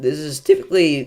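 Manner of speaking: breaking, cracked voice, cracking mid-phrase. Reading out a viewer's question about a storm: voice cracking. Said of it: "that was a horrible voice crack".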